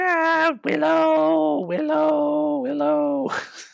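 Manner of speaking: very high, slow, rasping, creaky witch drawl. The speaker acts out what the witch says, in a witch voice. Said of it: "the witch is like".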